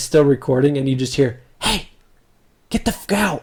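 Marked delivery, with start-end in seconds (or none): 1.6-3.4 high, hushed whisper under the breath. Retelling a friend whispering on a video near an elk; retelling a whisper. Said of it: "But he's whispering it".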